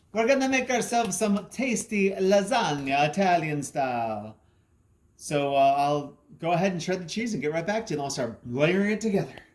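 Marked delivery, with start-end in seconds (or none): 0.1-4.3 put-on Italian accent on every word, pitched up. While making lasagna together, speak in an Italian accent. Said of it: "Italian accent".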